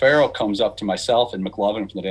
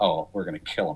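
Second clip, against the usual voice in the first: imitated whisper, lower and quieter; 5 semitones lower, 6 dB quieter than usual. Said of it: "He said it like a whisper".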